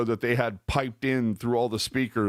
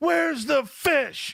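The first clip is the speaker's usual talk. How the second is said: put-on acted screaming child, very high. Retelling how a kid reacted, imitating a kid screaming. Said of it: "Like he's screaming".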